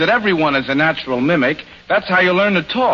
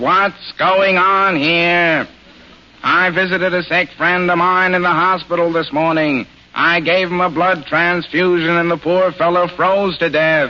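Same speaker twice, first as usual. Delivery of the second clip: put-on flat nasal voice. Showing how someone might sound after catching a cold, speak in a flat nasal Ned Sparks voice. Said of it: "the flat nasal voice of Ned Sparks".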